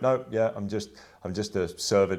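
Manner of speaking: play-acted dry, sarcastic tone. Retelling how policemen answered a questioner: imitating a sarcastic reply. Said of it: "they're saying it sarcastically".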